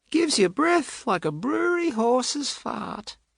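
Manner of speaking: very high, breathless, stealthy, air-starved voice. A character lifts it in salute and jokes, in a high-pitched, air-starved voice. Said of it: "In a high-pitched voice, as if his words are starved of air".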